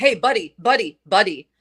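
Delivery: mock unfriendly, not-so-nice tone. Imitating men who say buddy: imitating a not-so-nice tone. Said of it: "a not so nice way".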